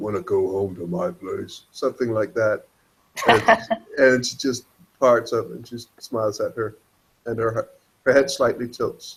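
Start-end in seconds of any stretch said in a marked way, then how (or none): 0.0-1.6 playful half-whisper in a deep, low register. Retelling how Laura approached a woman and half-whispered as a joke, imitating a deep joking half-whisper. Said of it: "whispers in a very deep voice".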